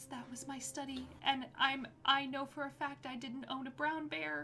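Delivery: very quiet, hushed, high-pitched voice. A storyteller voices a man peeking into a room: very quiet voice. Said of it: "very quiet voice".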